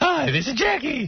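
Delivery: very high, slow, beaming, forced-cheerful voice. Imitating a coworker reading a plug: imitating Jackie's big-smile joke man voice. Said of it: "he puts this big smile on his face".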